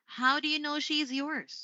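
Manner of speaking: falling intonation, pitch drops on yours. Demonstrating how to ask an open-ended question, falling intonation on question. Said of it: "you would use falling this time".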